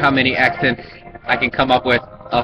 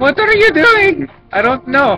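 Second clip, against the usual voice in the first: very high-pitched put-on Indian accent; 6 dB louder than usual. Trying out different accents, the speaker does an indian accent. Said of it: "so that was my Indian accent".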